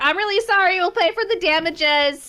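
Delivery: high-pitched shouting. Apologising in character into a house for the damages: yelling. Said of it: "I'm gonna yell into this house".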